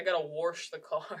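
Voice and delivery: put-on Wisconsin accent, R slipped into wash as warsh. Imitating a grandpa from Wisconsin who says words with an R: Wisconsin grandpa's added R. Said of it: "like with an R".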